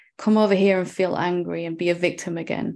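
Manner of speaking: ordinary talk, nothing marked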